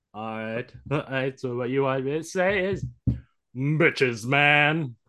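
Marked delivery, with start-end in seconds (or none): 3.5-4.9 put-on broadcast announcer voice. Asked to say a phrase, the speaker delivers it in an announcer voice. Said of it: "then I will say it in an announcer voice".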